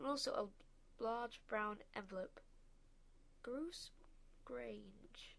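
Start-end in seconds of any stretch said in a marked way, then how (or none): 3.4-5.3 puzzled, confused, much quieter. A narrator reads a woman reading a name off an envelope, puzzled. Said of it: "she said in a puzzled voice".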